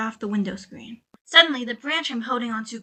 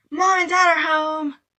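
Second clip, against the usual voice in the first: put-on very young, high, thrilled, excited little-kid cry; 5 semitones higher than usual. A very young voice calls out to Laura, very young, very excited shout. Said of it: "a very young, very excited voice shouted".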